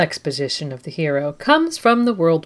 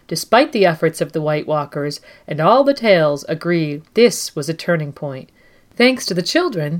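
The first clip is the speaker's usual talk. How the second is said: ordinary talk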